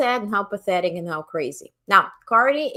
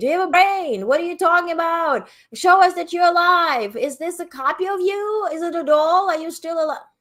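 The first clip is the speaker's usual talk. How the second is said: high, shrill, hectoring scream; 9 semitones higher than usual. Retelling questions so-called journalists threw at Biden: imitating someone screaming. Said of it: "he was screaming".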